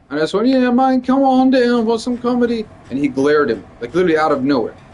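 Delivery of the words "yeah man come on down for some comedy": goofy, joking, silly high put-on voice. Retelling what was said in the hallway earlier: retelling own silly voice. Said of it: "doing a silly voice".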